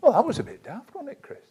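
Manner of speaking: light-hearted, very high voice. Self-talk about a daft answer, much lighter tone. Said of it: "in a much lighter tone of voice".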